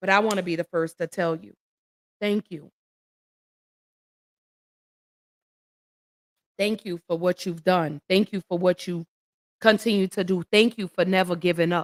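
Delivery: tearful, choked-up voice, crying while speaking. Speaking to Miss Colvin, choked up and crying; tearful, choked up. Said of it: "and crying".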